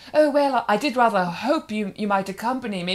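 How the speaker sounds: put-on highfalutin period-drama voice, laid on. Imagining a man asking a woman out after lockdown: Mister Darcy voice. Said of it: "very Mister Darcy's house".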